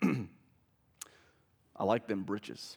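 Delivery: very slow, deliberate, drawn-out delivery. Retelling what a former pastor said in passing: imitating former pastor Corey. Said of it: "I'm gonna do an impression of him".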